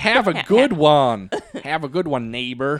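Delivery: put-on American accent. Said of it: "with an American accent".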